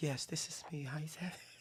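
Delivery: very soft, dropped voice. Retelling how another speaker answered his question: imitating a dropped voice. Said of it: "you dropped".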